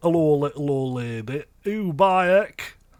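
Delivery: put-on monster voice with Yorkshire accent. Retelling what the dragon in a kids' show used to say: imitating a yorkshire dragon. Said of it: "the dragon was Yorkshire".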